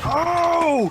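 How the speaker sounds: thrilled, excited outburst, high and loud. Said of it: "I straight jumped out of my chair and was like".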